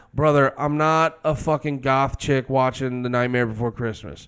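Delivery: ordinary delivery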